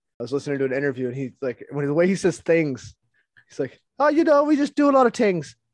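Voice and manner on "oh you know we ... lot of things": very high-pitched, loud put-on Irish accent. Describing the man who runs a company, heard in an interview, imitating Baron's Irish accent. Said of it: "He's this cool fucking like Irish guy".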